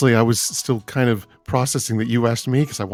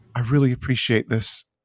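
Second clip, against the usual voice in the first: soft whisper. Playing a character who hugs her mom after getting out of the car, whispering.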